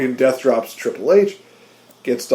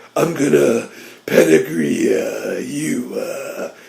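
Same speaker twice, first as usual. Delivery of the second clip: very slow, creaky, rough wrestler tough-guy voice; 2 semitones lower than usual. Redoing a wrestler's taunt more accurately: Triple H impression. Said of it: "There we go. That, that's, that feels more right".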